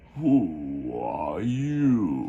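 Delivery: low, drowsy, lazy, languid, drawn-out sleepy drawl. Narrator reading a large blue caterpillar's question, languid sleepy voice. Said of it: "in a languid, sleepy voice".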